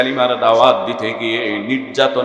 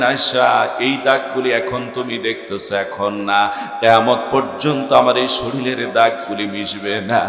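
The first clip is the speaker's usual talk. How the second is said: usual speaking voice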